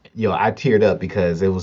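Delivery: normal talking voice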